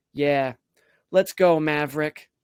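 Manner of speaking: loud, dead-serious, confident tone. Retelling a four-year-old son's answer at the door: imitating a very serious, confident reply. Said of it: "very serious and very confidently".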